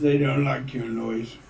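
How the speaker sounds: ordinary talk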